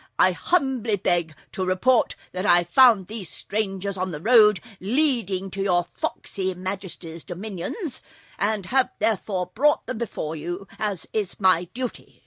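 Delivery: very loud, self-important, pompous formal proclamation. The captain bows before the king and reports finding strangers, in a pompous voice. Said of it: "addressing the king in a pompous voice".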